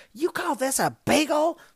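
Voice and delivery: piercing, shrill, high yelling at full volume. Assistant manager retells a woman complaining at the counter, retelling a woman's yell. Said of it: "there's this woman just yelling at Danny".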